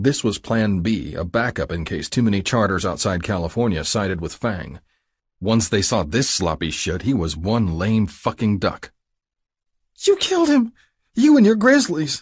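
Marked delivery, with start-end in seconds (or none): 10.1-12.2 very high, loud shrieking scream. The junkie screaming at the narrator in recognition. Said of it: "the junkie screamed".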